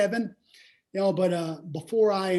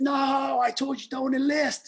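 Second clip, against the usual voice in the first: put-on high, slow, drawn-out furious yell; 8 semitones higher than usual. Retelling telling dad about enlisting: imitating dad yelling. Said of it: "he yelled at me".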